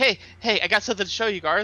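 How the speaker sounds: half-yelled, sort-of shouting loud call. Player's character at garth's door, calling to him, sort of yelling. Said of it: "I'm sort of yelling".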